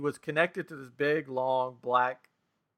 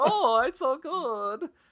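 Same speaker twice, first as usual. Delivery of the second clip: very high, very slow, swooping, drawn-out sing-song; 12 semitones higher than usual. Retelling what a haunted-house Hansel said: Gunter from The Simpsons voice. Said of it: "that's what it sounded like".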